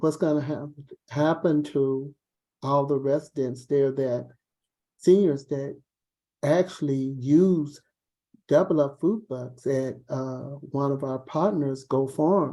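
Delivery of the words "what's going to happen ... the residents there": ordinary talk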